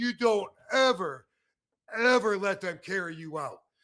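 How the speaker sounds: angry shout. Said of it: "he was screaming".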